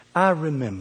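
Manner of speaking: soft, gentle, motherly voice.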